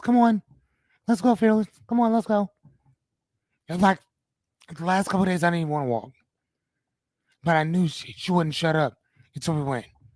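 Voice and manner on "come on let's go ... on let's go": small, tiny-sounding little voice. Speaker recalls Anya urging him to go walking, imitating Anya's little voice. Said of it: "I hear her little voice".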